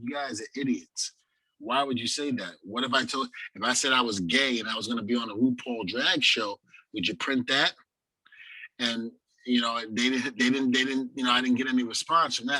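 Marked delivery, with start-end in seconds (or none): none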